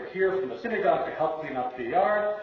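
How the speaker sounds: normal talking voice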